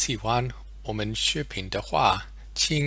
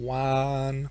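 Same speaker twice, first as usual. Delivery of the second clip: "one" drawn out long on a steady pitch; 2 semitones higher than usual. Pronunciation lesson building the sound from the word one, drawn-out steady one. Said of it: "let's drag it out a bit and try and hold it steady".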